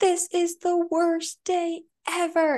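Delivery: very high, slow, teary, drawn-out crying wail. Retelling what a little boy said in the car, imitating a crying child. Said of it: "And he was, like, crying".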